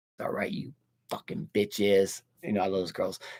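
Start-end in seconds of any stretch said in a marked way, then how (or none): 0.2-2.2 put-on horror villain voice. Pitching a story, speaking as Michael Myers: voicing Michael Myers. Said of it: "And Michael says".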